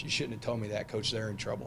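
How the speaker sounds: ordinary talk, nothing marked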